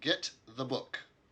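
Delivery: stuck-up, condescending, snooty, haughty tone. Narrating a scene with an orc and a dwarf, voicing the snooty human. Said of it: "the snooty human says".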